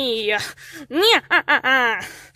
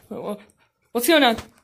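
ordinary delivery

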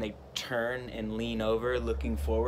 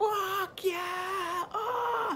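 acted scream, much higher pitched. Retelling how he and another man screamed after surviving a wave, retelling a scream. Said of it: "we just both just started screaming".

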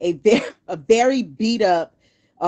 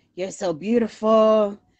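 put-on slurred words, heavy Spanish accent laid on thick. Retelling a drunk man at the door at 4 a.m.: imitating heavy Spanish accent, slurring. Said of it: "Real, real heavy Spanish accent, slurring all over himself".

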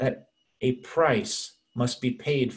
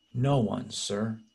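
put-on meek, shocked voice, slower pace. Retelling the woman's reply to Jesus in the story, imitating a meek, shocked voice. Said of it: "probably with a very meek and shocked voice".

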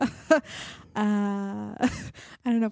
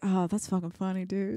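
mock deadpan delivery without laughing. Speaker imitates Juan, the DP, saying something is funny; imitating Juan's deadpan. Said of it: "He just smiles and says something's funny".

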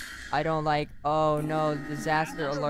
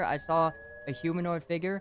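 ordinary talk

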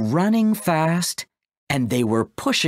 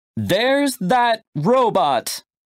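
high, raised shout; 8 semitones higher than usual. Narrator reads the woman in the green jacket's line, shouted. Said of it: "shouted the woman in the green jacket".

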